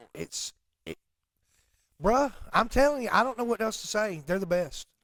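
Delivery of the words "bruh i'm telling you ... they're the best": loud, high-pitched hollering. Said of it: "I feel like you're hollering at me".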